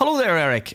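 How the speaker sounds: slight put-on Northern Irish accent. Retelling greeting a man from Belfast as he left the stage, put-on Northern Irish accent. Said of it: "I put on my Northern Ireland accent a bit".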